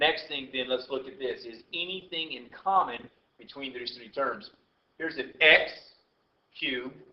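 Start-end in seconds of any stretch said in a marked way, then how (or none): 5.0-6.9 x stressed hard and enunciated clearly. Looking for what three math terms share, stress on x. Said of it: "you heard the enunciation I was making there with the x".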